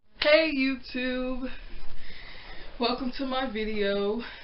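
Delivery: breathless, winded, all out of breath, panting. A YouTuber opens their video after rushing to set up, out of breath. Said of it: "I'm all out of breath".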